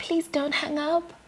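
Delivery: soft, little, small voice. Retelling answering the phone, quoting the caller on the line in a small voice. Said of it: "a small voice on the other side goes".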